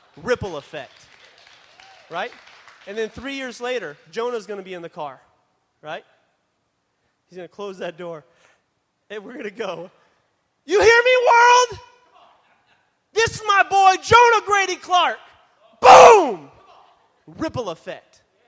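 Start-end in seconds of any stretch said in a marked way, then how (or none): 10.7-16.5 elated, very high-pitched joyful scream. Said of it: "I'm gonna scream to the top of my lungs".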